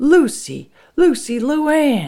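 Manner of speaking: put-on shrill, high, yelled old-soldier military voice. Retelling a man coming home and yelling for someone, in Frank's military captain voice. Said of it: "He got his cap'n voice on, his old military voice".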